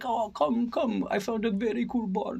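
put-on mimicked German accent. Speaker retelling a partying friend urging them out to a bar, imitating a german accent. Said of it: "he's got that German accent".

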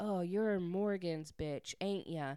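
put-on, mocking smug tone. Retelling how a smug man walks over to a woman: mimicking a smug guy. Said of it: "he's all smug and he's like".

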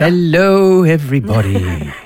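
Irish-sounding accent. Podcast co-host greeting everyone at the start of the show, sounding irish. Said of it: "He sounded like you were from some wee Irish getaway there".

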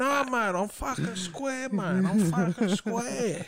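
feeble junkie voice, put-on. Joining in imitating a junkie character from a movie: feeble junkie voice. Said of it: "Feeble, feeble junkie".

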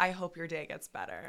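acted, falsely kind, bitchy, passive-aggressive sweetness. Retelling a reply to a yelling guest: imitating own passive-aggressive remark. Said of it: "I'm so bitchy and passive aggressive".

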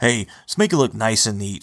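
usual speaking voice

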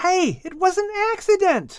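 very high-pitched, protesting, defensive exclamation. Japheth, shoved by his brother Shem, protests, exclaiming defensively. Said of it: "Japheth exclaimed in his defense".

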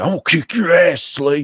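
put-on sudden, high-pitched, out-of-nowhere fury. Retelling a man's threat to the speaker, imitating a sudden rage. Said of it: "a rage that was so fast it didn't make sense".

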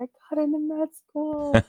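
mock triumphant shout, pitched very high. Recalling standing up at the desk after getting the email, retelling a shout. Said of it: "standing up and shouting".

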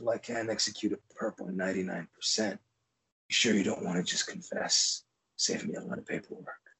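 hushed, hard, breathy tough-guy whisper. Retelling a movie character's line to a suspect: Clint Eastwood-style delivery. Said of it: "real Clint Eastwood".

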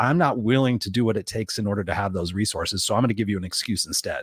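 ordinary talk

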